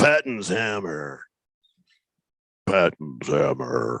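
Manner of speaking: very low, deepening drone. Repeating a suggested nickname aloud: voice getting deeper each time. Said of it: "My voice just gets deeper every time I say it".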